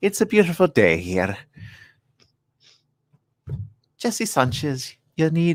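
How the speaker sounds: put-on elderly Scottish nanny voice. Against a countdown, the speaker shows they can do a Mrs. Doubtfire voice. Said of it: "I could do Missus Doubtfire".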